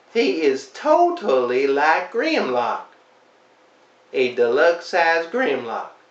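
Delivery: heavy, dripping sarcasm laid on thick. Reviewing a toy that does not look like its character: heavy sarcasm. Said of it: "There is no sarcasm in my voice whatsoever".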